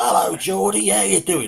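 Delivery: high put-on Cockney accent. Quoting a show scene where a porn king meets someone: Malcolm McDowell cockney accent. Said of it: "He plays a cockney".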